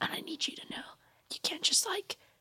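fast, soft, unvoiced whisper. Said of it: "Why are we whispering it?".

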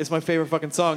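ordinary talk, nothing marked

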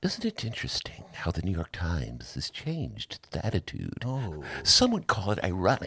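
calm, soft, dispassionate, reasonable public radio voice. Speaker redoes his argument dispassionately as though on NPR, NPR voice. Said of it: "I will now do it as though I were on NPR".

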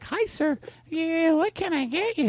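very high, robotic, automatic service chirp, barista voice. Retelling the barista turning cold: imitating an automatic Stepford barista. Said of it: "they're on that automatic Stepford fucking".

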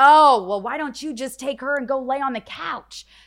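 very loud, high, drawn-out scream. Retelling a fight with a man over a bench, imitating his screaming. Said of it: "now he's screaming".

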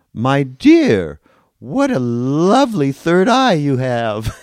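very loud, animated, high, swooping, carrying voice. Retelling what a woman said to the speaker when they walked in: very loud voice. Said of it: "she said in a very loud voice".

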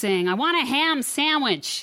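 put-on high, slow, bitchy American accent. Retelling a guy demanding a sandwich: imitating a bitchy American accent. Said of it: "really good bitchy American accent".

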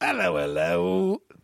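fake, put-on British accent. Greeting the room after being asked for the British voice: put-on British accent. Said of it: "I wanna hear your British".

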